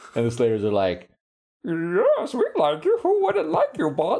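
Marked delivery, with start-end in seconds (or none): 1.6-4.2 very high voice with swooping pitch. Imitating what the slayers say to their boss: imitating slayer minions. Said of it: "That's what I think slayers sound like".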